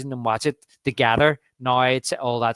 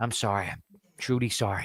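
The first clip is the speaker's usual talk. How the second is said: play-acted, all-apologetic, contrite tone; 3 semitones lower, 7 dB quieter than usual. Quoting the mayor apologizing to Brody in a film scene: imitating an apologetic mayor. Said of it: "the mirror's all apologetic".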